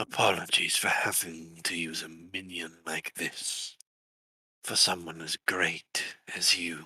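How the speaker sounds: soft, whisper-like murmur. A narrator voices a trapped entity speaking into a player's ear, soft, whisper-like voice. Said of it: "Nira, you hear a voice. Something soft, almost like someone whispering in your ear. / Something soft, almost like someone whispering in your ear".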